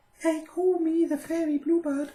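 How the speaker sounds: sweet little twittering bird voice, very high and loud. A little bluebird offers to guide Conrad and introduces herself: sweet twittering bird voice. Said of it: "she twittered, her sweet little voice".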